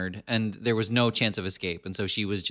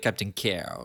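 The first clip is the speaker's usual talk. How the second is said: choking theatrical voice, lower pitch; 3 semitones lower than usual. Recalling an actor addressing William Shatner: choked Christopher Plummer delivery. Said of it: "like he's choking on something while he says it".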